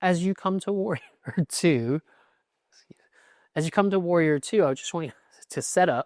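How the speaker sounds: chuckling mid-sentence, barely holding back laughter. Guiding a class into warrior two, the instructor speaks while laughing. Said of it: "Sorry, I'm laughing".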